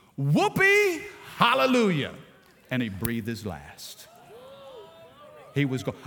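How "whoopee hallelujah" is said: full-volume shout, high and swooping. Retelling a grandfather's last words in the night: imitating a shout at full volume. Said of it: "he shouted at the top of his lungs".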